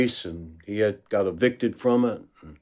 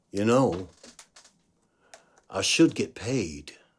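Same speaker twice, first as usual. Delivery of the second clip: put-on deep-voiced Southern American kid voice; 5 dB quieter than usual.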